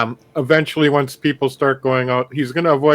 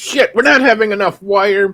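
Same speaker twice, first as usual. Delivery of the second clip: put-on angry yelling and screaming, higher pitch; 7 semitones higher, 4 dB louder than usual. Describing crew in the hall: imitating yelling and screaming. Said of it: "they're yelling and screaming, going".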